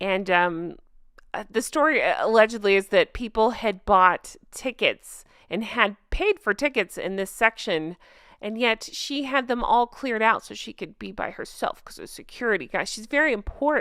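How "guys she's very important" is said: heavily sarcastic, dripping with sarcasm. Mocking a royal who had a stand cleared: dripping with sarcasm. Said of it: "read the sarcasm dripping from my voice".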